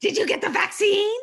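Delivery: put-on heavy Lebanese accent. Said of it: "with his big Lebanese accent".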